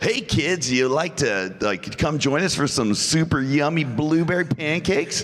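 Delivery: put-on very high-pitched, cheesy, hokey kids-show host voice. Retelling an audition for a kids show: imitating hokey kids-show dialogue. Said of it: "the most hokey dialogue I've ever heard".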